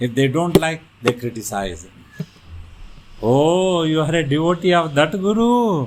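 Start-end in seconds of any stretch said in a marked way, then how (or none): 3.2-5.9 slow, drawn-out, high-pitched sarcastic tone. Retelling how critics mock a devotee: imitating sarcastic critics. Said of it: "They will do a sarcastic remarks".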